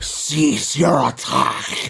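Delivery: rough, growly, groveling voice. Player character in rudimentary draconic, trying to stop an attack, in a growly grovel voice. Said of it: "I mouth in a growly grovel voice".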